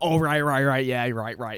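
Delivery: loud, eager voice. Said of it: "This classic [name] talk".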